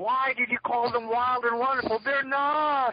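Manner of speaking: very high, enraged, furious screaming. Retelling how an angry audience member screamed at the filmmakers: imitating a screaming audience member. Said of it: "he just starts screaming".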